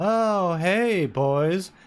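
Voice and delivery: put-on spaced-out drugged voice. Retelling a scene, imitating Annerose as if high on drugs. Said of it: "always gives off the vibe that she's kind of on drugs".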